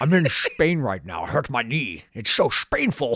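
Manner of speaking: Spain and Spainful both begun with hard sh. Joking about Sean Connery saying where he's from: Sean Connery impression. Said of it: "a hard sh on the front".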